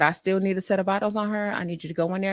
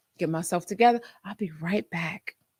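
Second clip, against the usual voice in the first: put-on sweetest, politest voice. Retelling what she said before stepping away, retelling in her politest voice. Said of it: "In the most kindest, most politest voice".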